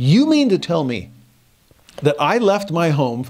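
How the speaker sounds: furious, snapped angry outburst. Retelling snapping at a worker over a policy: imitating own angry outburst. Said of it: "I just unloaded on her".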